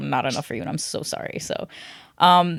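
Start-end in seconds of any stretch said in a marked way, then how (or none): 0.0-1.4 whispered, sarcastic, acted out. Retelling what was said to a partner: retelling a sarcastic remark. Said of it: "I was so sarcastic".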